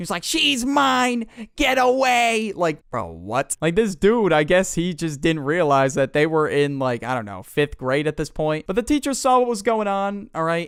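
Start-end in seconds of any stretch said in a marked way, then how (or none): 0.2-2.5 mock very high, very slow, drawn-out child yell. Retelling a boy on the floor of a bus yelling at a rival: imitating a kid yelling. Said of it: "yelling at Patrick to get away from her".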